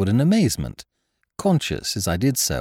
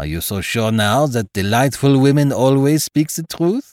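sly, knowing, needling, insinuating tone; 2 semitones higher, 4 dB louder than usual. A man questions his friend outside after talking with a porter, sly. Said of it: "my friend demanded slyly".

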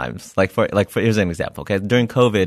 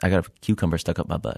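mock casual, unbothered tone, quieter; 2 semitones lower, 5 dB quieter than usual. Retelling what a patient with a stuck object said: imitating a nonchalant patient. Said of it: "Just nonchalantly".

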